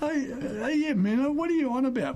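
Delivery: put-on gentle, smiling, very high voice. Retelling an exchange, the speaker quotes Rocket imitating his gentle, smiling voice. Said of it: "in his gentle, smiling voice".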